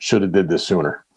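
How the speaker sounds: ordinary talk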